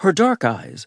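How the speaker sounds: ordinary delivery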